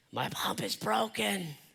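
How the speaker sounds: slow, rasping, hoarse delivery. Speaker acts out how an upcoming conversation will go, putting on a hoarse voice. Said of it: "with a hoarse voice".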